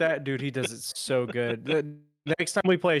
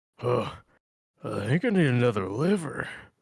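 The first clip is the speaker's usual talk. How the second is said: extremely gruff voice. Drunk and throwing up, doing a gruff Nathan Explosion voice. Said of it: "I did the most gruff voice I could possibly do to sound like Nathan Explosion".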